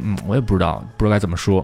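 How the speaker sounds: plain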